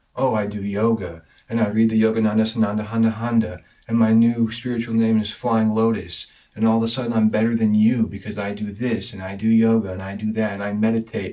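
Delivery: snide, self-satisfied, sneering sarcastic mock voice. Talking about what being spiritual means, the speaker acts out a show-off in a sarcastic mock quote. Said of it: "of course I'm being sarcastic there".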